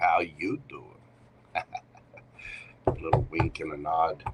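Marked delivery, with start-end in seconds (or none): 0.0-0.8 cheesiest, oversold pickup-line voice. Greeting someone by name, Joey from Friends impression. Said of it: "my cheesiest pickup line voice".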